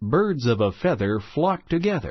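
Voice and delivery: normal talking voice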